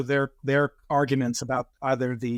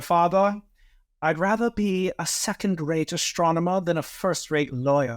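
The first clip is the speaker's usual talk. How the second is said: put-on British accent, played straight; 3 semitones higher than usual. Retelling what a man told his father after quitting law, in a british accent. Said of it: "he told his father in a British accent".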